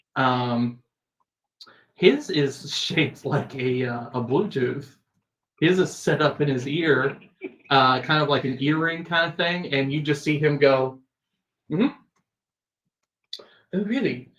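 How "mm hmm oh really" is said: put-on British accent. Voicing a character taking a call on an earpiece: British accent. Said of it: "it keeps going British for some reason".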